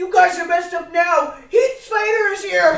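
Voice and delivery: shrill, very loud, high-pitched announcing shout. Retelling how a man opened a door and called out, retelling a yell. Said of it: "he yells out".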